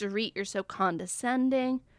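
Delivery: ordinary talk, nothing marked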